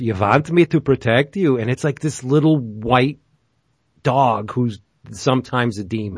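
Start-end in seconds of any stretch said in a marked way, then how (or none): 0.0-1.6 put-on Yiddish accent with broken English. Retelling how a little demon dog in a comic talks: broken Yiddish accent. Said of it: "the demon talks in this broken, like, Yiddish".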